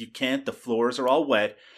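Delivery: normal talking voice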